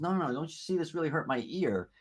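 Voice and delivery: blubbering, high, tearful crying whine. Retelling how the boy started crying again over his ear; imitating a crying boy. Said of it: "then he started to cry again".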